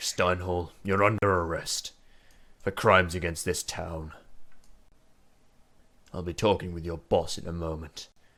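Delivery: disgusted, repulsed tone. Narrating a scene, voicing a character placing someone under arrest, disgusted. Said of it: "He just looks at you disgusted".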